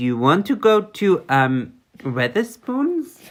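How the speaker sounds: fake German accent in English. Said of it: "yeah, that's it".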